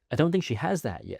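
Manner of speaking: ordinary talk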